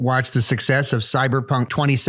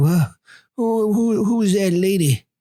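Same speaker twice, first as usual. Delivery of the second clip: slow, high, drawn-out aging politician voice; 7 semitones higher than usual. Showing the more recent Bill Clinton impression being worked on. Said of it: "the more recent Bill Clinton, which is more like".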